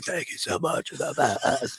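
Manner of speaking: quiet, hushed whisper. Imitating a wrestler thanking people in a library: imitating someone whispering. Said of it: "he's whispering, but he's like".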